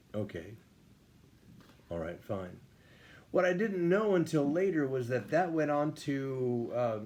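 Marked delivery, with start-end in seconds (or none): 0.1-2.6 acted whispered, breathy, expressionless deadpan. Recalling asking drill sergeants for their own Bible study, imitating a deadpan reply.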